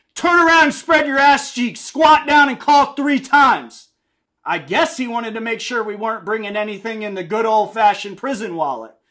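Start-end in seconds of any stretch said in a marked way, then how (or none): 0.2-3.9 high, loud screaming, rapid one after another. Recounting how he screamed orders at about fifteen inmates, retelling a scream. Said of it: "then he screamed again".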